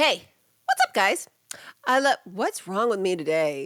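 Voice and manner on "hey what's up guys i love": high, swooping, pitched-up cartoon voice. Starting to read a listener message aloud: Bugs Bunny voice. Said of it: "That was just like a Bugs Bunny".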